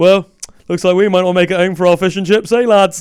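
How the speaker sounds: British soldier voice with a joking tone. Imitating British soldiers in a gunfight: imitating a soldier cracking jokes. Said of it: "just cracking jokes".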